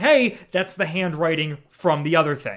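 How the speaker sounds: plain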